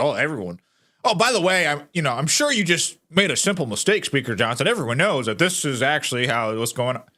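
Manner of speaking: fast, breezy, offhand, matter-of-fact tone. Imitating a woman's tone toward Speaker Johnson: mock matter-of-fact tone. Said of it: "her tone of voice. It's like so matter of fact".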